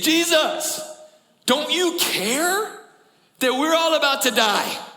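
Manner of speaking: angry, panicked cry at very high pitch. Retelling the disciples waking jesus in a storm: imitating panicked angry disciples. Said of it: "they're angry. They are panicking".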